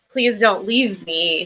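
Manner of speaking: put-on pleading voice. Retelling a scene where a character begs not to be left: imitating someone pleading. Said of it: "Mary starts pleading".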